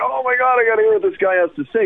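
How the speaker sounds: high, fast, amazed, gushing excitement. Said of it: "everyone's like".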